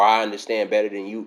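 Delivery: ordinary delivery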